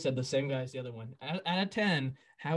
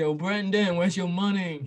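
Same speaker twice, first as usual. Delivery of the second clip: put-on New Jersey wiseguy mobster accent; 3 semitones higher, 4 dB louder than usual. Speaker imitates his landlord phoning him, imitating Nolan's Sopranos-like voice. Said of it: "he sounds like a member of the Sopranos".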